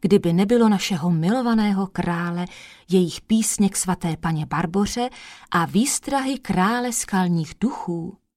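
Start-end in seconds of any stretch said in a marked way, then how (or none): none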